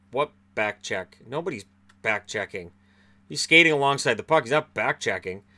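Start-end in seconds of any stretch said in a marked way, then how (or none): none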